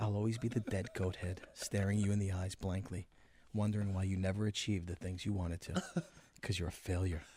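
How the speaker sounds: low, soothing, articulate voice with eerie calm. Voicing a dead goat head staring at someone: calm, soothing, eerie voice. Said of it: "it has a night has a calm, soothing voice".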